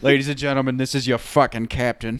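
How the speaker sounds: put-on Boston accent. Imagining Sully addressing his passengers as captain, in a Boston accent. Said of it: "I think he has a Boston accent".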